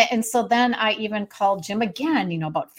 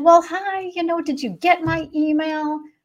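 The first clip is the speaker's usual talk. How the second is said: put-on sugary-sweet politeness, high and slow; 7 semitones higher than usual. Retelling an earlier phone call, imitating own sweet tone. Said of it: "I was being sweet as pie".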